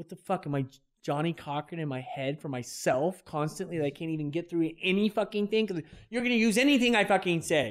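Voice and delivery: very loud yell, rising pitch, not emotional. Speaking to a listener in a conversation, yelling. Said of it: "I'm yelling, but I'm not emotional".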